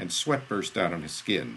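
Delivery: ordinary delivery, nothing marked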